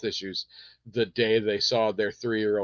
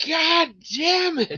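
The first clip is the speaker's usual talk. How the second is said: put-on very high, shrill, loud, furious, acted child's tantrum; 6 dB louder than usual. Retelling a toddler stomping her foot: imitating a child's angry outburst. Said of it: "she stomps her foot and holds up her hand and just goes".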